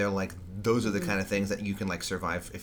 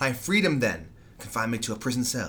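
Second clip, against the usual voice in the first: mock raised voice lifting hard on "prison cell"; 3 semitones higher, 4 dB louder than usual. Discussing a confrontation scene, the speaker quotes the character's line: Hannibal's raised voice. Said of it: "And then he raises his voice".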